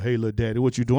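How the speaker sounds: mock wheezed-out low voice. Retelling a late-night phone call, imitating a wheezy deep voice. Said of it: "She called me all wheezed out".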